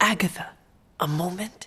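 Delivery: whispered, hushed. Asking Agatha for a moment again, whispering. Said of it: "we're still whispering?".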